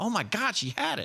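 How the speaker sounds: very high, surprised yelled outburst. Retelling getting a text with a baby picture: retelling own yell. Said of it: "I just yelled out".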